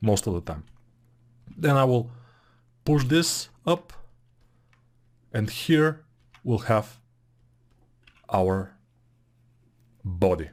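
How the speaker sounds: even, robotic, machine-like mechanical delivery. Explaining steps while working on a model: talking like a robot. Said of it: "why am I talking like a robot".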